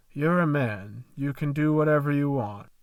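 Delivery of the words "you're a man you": usual speaking voice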